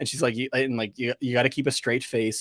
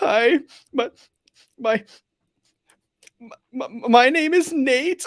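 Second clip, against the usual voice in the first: put-on tearful child voice, much higher and louder; 13 semitones higher, 7 dB louder than usual. Retelling a phone call, the speaker does the kid's voice, imitating Nate choking up. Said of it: "he's starting to tear up and choke up".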